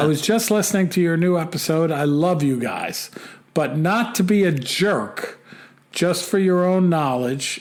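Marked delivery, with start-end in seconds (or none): none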